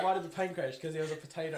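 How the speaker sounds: plain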